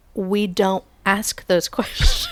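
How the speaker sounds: exasperated, annoyed, drawn-out sing-song voice. Retelling a daughter's reply to a repeated question: imitating annoyed daughter. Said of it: "and Luca gets so annoyed".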